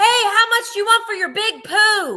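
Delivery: mock, shrill, very high called-out shout. Telling a listener about shouting to a flea-market seller: re-enacting her own shout. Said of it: "And I just shouted".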